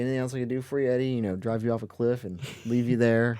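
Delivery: mock nonchalant mutter under breath. Describing a movie scene with eddie, retelling a character's under-breath mutter. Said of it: "Under his breath".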